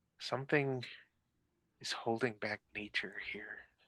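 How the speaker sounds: very soft, hushed whisper like wind through leaves. Storyteller voicing a voice only the listener hears, soft voice like wind. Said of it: "a soft voice like wind through the leaves say".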